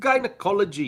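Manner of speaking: clumsy, very high, bad Scottish accent. Saying a strangely spelled word aloud: bad scottish accent. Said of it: "that's not a very good sp-, s-, Scottish accent".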